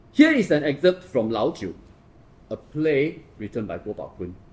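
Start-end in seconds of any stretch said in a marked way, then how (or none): 2.5-4.4 word play leaned on hard. Introducing an excerpt, with strong stress on play. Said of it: "I stress the word play".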